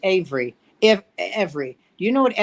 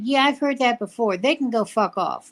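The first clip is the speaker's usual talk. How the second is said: small, slight, tiny little voice; 4 semitones higher than usual. Retelling Simone Biles answering a reporter: imitating a little tiny voice. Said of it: "she's at that little tiny voice like this".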